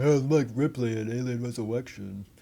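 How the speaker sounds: put-on deep voice of an eight-year-old. Imitating own eight-year-old self at the pool: imitating own eight-year-old voice, deep. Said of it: "Deep voice like that".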